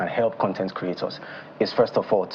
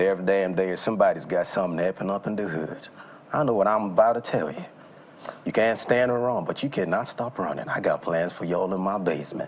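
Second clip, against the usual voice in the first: British English accent with an American-sounding quality.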